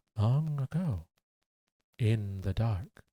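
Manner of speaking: drawn-out narrator voice, long pause after every phrase. Mimicking YouTubers who stretch out their content, imitating YouTubers telling a story with pauses. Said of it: "YouTubers who talk like this".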